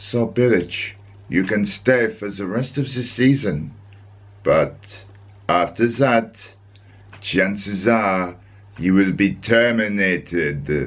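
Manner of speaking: sinister, slightly evil put-on German accent. The speaker imagines what the director of football would say, in a slightly evil german accent. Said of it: "with a slightly evil German accent like this".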